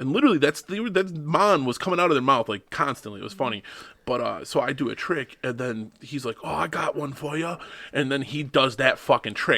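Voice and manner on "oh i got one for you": put-on Jamaican accent laid on heavy, high and slow. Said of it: "in this thick Jamaican accent".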